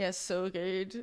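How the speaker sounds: deadpan, flat monotone with no lift. Saying they just can't fake it and sound so monotone: flat monotone. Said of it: "I'm so monotone. Like I be like".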